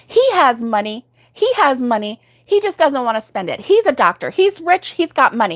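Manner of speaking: heated, indignant yelling, pitched high. Retelling how a woman in a parking garage yelled: imitating an angry woman yelling. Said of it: "she starts yelling at me and she's getting hot".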